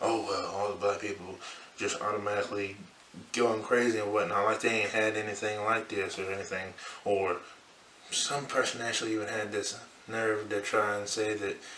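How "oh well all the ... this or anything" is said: ordinary delivery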